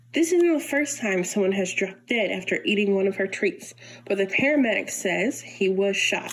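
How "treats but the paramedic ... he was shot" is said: normal talking voice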